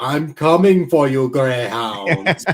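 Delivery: exaggerated, stock cartoon-style German accent. Imitating a U-boat taunting a destroyer over the intercom, in a stereotypical German accent. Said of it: "it's this very like stereotypical like German accent".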